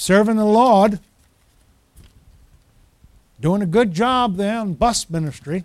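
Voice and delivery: put-on gentle, light small-town Maine accent. Remember how Ted encouraged you in bus ministry, imitating Ted's Maine accent. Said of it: "and his little Maine accent".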